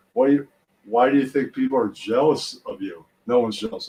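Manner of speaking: usual speaking voice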